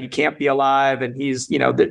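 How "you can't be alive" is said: ordinary talk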